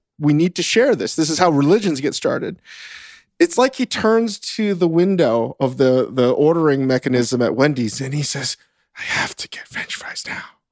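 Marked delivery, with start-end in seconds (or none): 9.0-10.4 put-on muttered whisper, much quieter. Retelling what a man whispered to himself at a Wendy's drive-through, whispering. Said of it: "Why are you whispering to yourself?".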